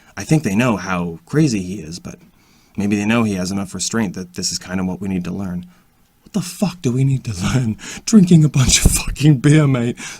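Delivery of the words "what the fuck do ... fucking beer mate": loud, pitched-up words fighting back laughter. Commenting on another man's behavior, holding back a laugh. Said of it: "I'm trying not to laugh".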